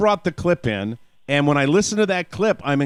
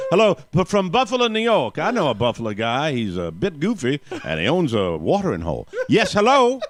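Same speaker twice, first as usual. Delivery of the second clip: faked, put-on southern US accent. Host greets a caller from Buffalo in a put-on southern accent. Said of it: "You got the wrong accent".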